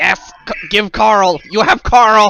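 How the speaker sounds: loud, high, croaking newt-creature voice. Voicing a newt person who grabs the pole: croaking newt person voice. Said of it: "sort of croaks at you".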